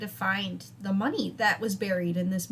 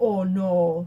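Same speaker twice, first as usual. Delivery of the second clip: put-on Wisconsin-accented speech; 4 dB louder than usual. Describing how she and her mom talk on the phone, in a thick Wisconsin accent. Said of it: "my mom has a really thick accent".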